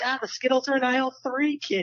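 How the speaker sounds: put-on Boston accent, very high pitch. Imitating a Walgreens worker: put-on Boston accent. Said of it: "go into any Walgreens and hear him be like".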